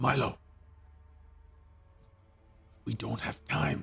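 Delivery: low-voiced, hushed, urgent tone. A character speaks to milo, who keeps stepping forward; hushed. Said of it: "In a hushed tone".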